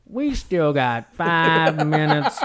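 every word dragged out, loud and slow. Imitating another speaker's words about the game clock: grandma from Nutty Professor voice. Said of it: "you sounded like the grandma from Nutty Professor".

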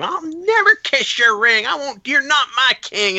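put-on, very high-pitched, defiant screaming. Retelling how a lady at ringside screamed back at a wrestler; imitating someone screaming. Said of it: "And she's screaming at him".

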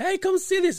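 excited high call.

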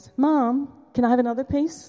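put-on high, loud little kid voice. Retelling a child interrupting the adults' chat, in a little child's voice. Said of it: "I heard this little voice".

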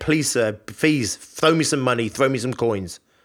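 normal talking voice

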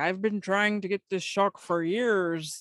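fake Irish accent, tentatively tried. Quoting the old guy from Jaws, in a put-on Irish accent. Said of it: "I think that's my Irish accent".

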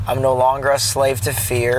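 normal talking voice

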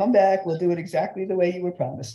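normal talking voice

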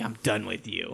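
low quiet dismissive tone. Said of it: "And I'm like".

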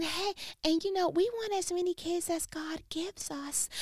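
calm, soft, high, gentle voice that never rises. Imitating a mother of many kids who never raises her voice. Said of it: "she spoke in just this voice like this".

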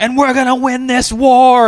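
play-acted, shrill, very high, loud yell. Recalling a performer's act in Palm Springs, retelling a yell. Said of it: "he just starts yelling".

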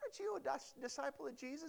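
put-on very soft, hushed, high little girl voice. Retelling a little girl questioning a disciple: imitating a little girl asking. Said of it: "picture this little girl comes up to him like".

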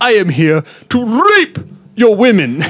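put-on heavy Arabic accent, shrill, loud, high. Voicing the demon Sheikh Abdullah from the letter: put-on heavy Arabic accent. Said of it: "speaks in a heavy Arabic accent".

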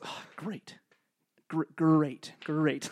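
imitated mumbling, muttering voice. Retelling how a man who missed his chance mumbled to himself: imitating someone mumbling. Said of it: "Like mumbles to himself".

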